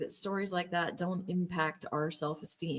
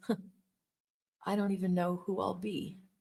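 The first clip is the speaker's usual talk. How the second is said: put-on whispering with a chuckle. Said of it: "him kind of whispering under his breath".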